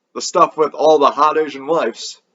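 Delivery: ordinary delivery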